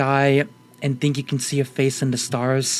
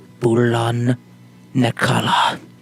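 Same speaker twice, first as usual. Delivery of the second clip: whispered words; 3 semitones lower, 4 dB louder than usual. Telling a story where a character leans close to someone's ear, whispering. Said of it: "he whispers".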